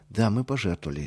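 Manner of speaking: usual speaking voice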